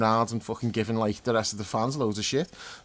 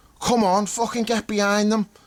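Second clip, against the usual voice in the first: very high, raised rallying yell; 10 semitones higher, 4 dB louder than usual. Telling a story about a man in the stadium crowd, imitating him shouting. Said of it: "he starts fucking shouting".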